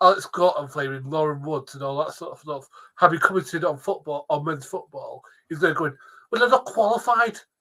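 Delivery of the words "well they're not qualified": mock Scottish accent, higher. Ranting about a man who complained about football commentators, quoting him in a mock Scottish accent. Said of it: "Love the little Scouse accent there".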